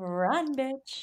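soft, high-pitched, creepy and menacing eerie voice. Retelling a story scene, the speaker voices Amarantha speaking to Feyre in a scary, creepy voice. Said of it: "Making that scary, creepy voice".

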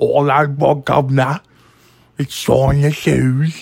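loud, high-pitched put-on Cockney accent.

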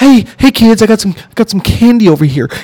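high-pitched beckoning voice. Joking about a creepy vibe, doing a Woody Allen voice. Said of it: "this is my Woody Allen".

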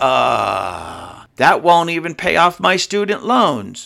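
slow, crestfallen, dismayed tone with drawn-out uh. Imitating a job applicant who hears the low pay: imitating someone in dismay. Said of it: "in dismay".

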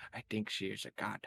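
soft, hushed whispered aside. In the game, a character turns to Billy and whispers to him; whispering. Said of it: "I turn around to Billy and whisper".

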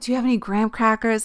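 earnest, really pleading, begging tone. Retelling a hospital stay, imitating own begging. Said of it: "so I was begging".

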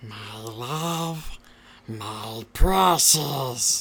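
loud, belted-out put-on creature voice. Asked to do Gollum into the microphone late at night, Gollum voice. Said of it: "Do some Gollum for us right now".

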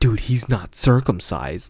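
mock utterly earnest, grave, solemn, dead serious delivery. Retelling what a man said while pointing at another guy, imitating a serious tone. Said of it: "he said it so serious".

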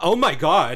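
mock dramatic, high, loud shriek of alarm. Recounting a teapot lid dropping into the speaker's tea, retelling a scream.

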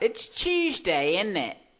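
put-on British accent, loud and sing-song. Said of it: "you kinda sound British".

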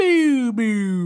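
high, loud boo like a broken alarm.

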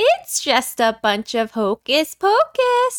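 high-pitched character voice with swooping pitch. Friends arguing over how a phrase should be said, trying to do Winifred. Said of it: "I was trying to do Winifred".

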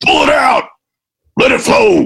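gruff, rough, high strength-coach voice. Describing someone as a strength coach, the speaker does a mock coach bellow. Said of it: "bellow at them like a coach".

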